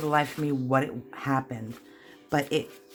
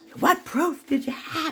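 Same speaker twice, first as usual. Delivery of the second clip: put-on hollering, higher; 14 semitones higher than usual. Retelling how the mother yelled at the principal: imitating mother hollering. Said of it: "She was hollering at him".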